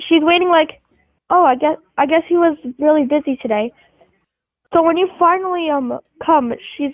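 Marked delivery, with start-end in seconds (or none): none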